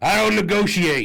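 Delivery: high-pitched, slow yelling. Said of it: "and yells".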